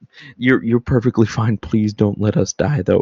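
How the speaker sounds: calm, sweet and gentle. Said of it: "And calmly, sweetly, gently".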